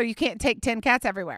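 ordinary delivery

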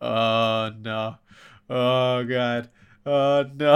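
acted panicky, freaking-out voice. Retelling how he sat at the table in front of the kids, imitating someone freaking out. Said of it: "freaking out throughout dinner".

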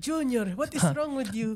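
put-on high auntie voice, Filipino accent. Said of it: "in a Filipino aunt voice".

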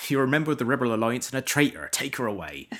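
put-on loud, high-pitched, thick West Country accent laid on heavily. Imitate a man whose accent made the line funny, in a very thick West Country accent. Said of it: "he obviously had a very thick West Country accent".

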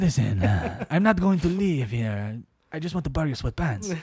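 imitated Mexican accent, deliberately put on.

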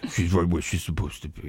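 deep, very low delivery. Quoting a movie character in a Vin Diesel impression. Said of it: "A lot of good Vin impressions".

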